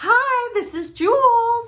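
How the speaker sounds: cutesy voice, very high, very slow and drawn out. Showing how she always answers the phone, high-pitched phone voice. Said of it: "high pitch influx that I do with my voice. Like I call it my phone voice".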